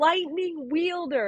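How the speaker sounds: proud, exultant, high, excited roaring shout. Playing Taryn yelling in pride, Taryn's proud roaring yell. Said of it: "he's roaring and he's so excited".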